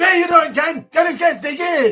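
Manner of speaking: put-on loud, high, hyped, fired-up broad Glaswegian accent. Imitating Billy Connolly when younger: hyped broad Glaswegian voice. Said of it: "he used to be really hyped and like".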